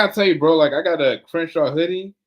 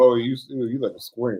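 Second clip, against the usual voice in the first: ordinary talk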